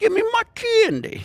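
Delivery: very high, loud, shrill, belted out. Retelling a child demanding candy with a cigarette: Andrew Dice Clay voice. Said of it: "he put it around his face and goes".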